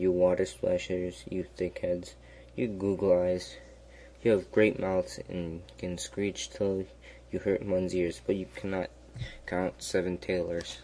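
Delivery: ordinary delivery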